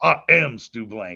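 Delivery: "am" stressed, low and slow.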